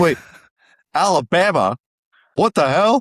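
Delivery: loud, stretched-out, drawn-out live outburst. Retelling a Washington State fan's live reactions: imitating a fan's live reaction. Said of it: "He just goes, like".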